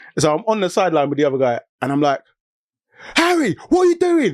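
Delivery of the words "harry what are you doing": very high, acted-out holler. Retelling coaching from the football sideline: imitating own shouting. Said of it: "I'm just shouting".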